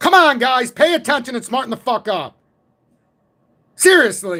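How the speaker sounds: loud, high-pitched hollering yell. Speaking directly to the listeners, yelling. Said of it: "I gotta yell like this".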